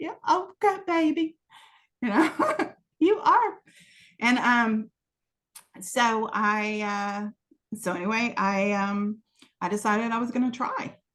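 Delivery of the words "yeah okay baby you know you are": put-on thick Texan accent, pitched high. Quoting the way a woman talks, in a thick Texan accent. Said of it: "with that real thick Texan accent".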